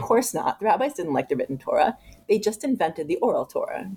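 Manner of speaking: normal talking voice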